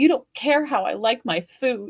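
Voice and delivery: mock-hurt, put-on pained voice. Retelling what he said turning at the kitchen door, imitating a pained voice. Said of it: "same inflection in his voice and pain in his voice".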